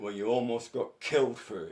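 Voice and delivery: loud, angry, hard voice. Retelling his reply to the hardest guy after a threat, retelling an angry remark. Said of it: "Angry voice and angry eyes".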